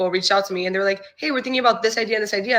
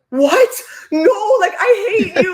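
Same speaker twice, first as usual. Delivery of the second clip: very high, drawn-out, frantic, exasperated cry; 12 semitones higher, 5 dB louder than usual. The speaker retells answering his suggestion of a goodbye TikTok; retelling going crazy. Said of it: "I'm literally going crazy".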